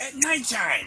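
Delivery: very high, loud, hissed goblin voice. Game master voicing a goblin answering a question after being slapped; hissing goblin voice. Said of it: "the goblin kind of hisses at you and he says".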